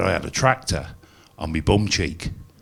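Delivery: normal talking voice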